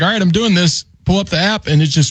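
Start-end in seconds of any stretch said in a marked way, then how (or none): none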